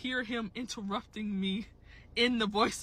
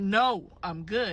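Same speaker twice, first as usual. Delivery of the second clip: put-on annoyed, irritated tone. Retelling how she turned down a persistent stranger: retelling an annoyed refusal. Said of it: "I'm starting to get pissed off now".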